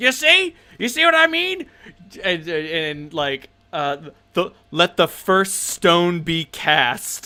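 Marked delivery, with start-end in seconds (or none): 0.0-1.7 put-on very high, hollering, grizzled old dwarf voice. Game narrator voices a dwarf roaring at a player's dirty joke: grizzled old dwarf voice. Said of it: "This grizzled old dwarf, and he's like".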